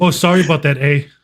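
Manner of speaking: put-on Canadian accent. Joking about Canadians by imitating how they talk: imitating Canadians. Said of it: "they just go".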